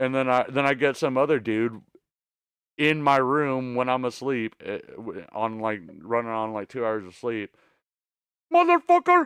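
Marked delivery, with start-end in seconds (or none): 8.5-9.3 very high-pitched put-on Indian accent. Retelling what a hotel clerk yelled on entering the room: imitating an Indian accent. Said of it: "that's probably a really racist, uh, accent".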